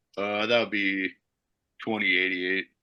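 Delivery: low, indistinct mumble under the breath. Retelling what the guy at the register said, imitating his mumble under the breath. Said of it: "the guy kind of mumbles under his breath".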